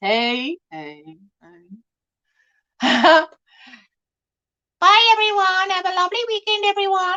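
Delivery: high, squeaky, drawn-out little voice. Imitating Jessica saying goodbye to everyone: squeaky Jessica impression. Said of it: "Jessica does not have that squeaky voice".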